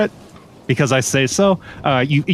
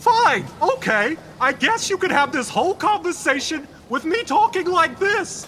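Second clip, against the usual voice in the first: yelling, higher; 13 semitones higher, 4 dB quieter than usual. Told they can't be heard, speaker answers from far away, yelling. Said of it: "That's my yelling voice".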